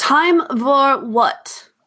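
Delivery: high, angry, irritated, exasperated tone. Speaking as Katja, repeating the question back to him, angry and annoyed. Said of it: "in a more angry and annoyed voice".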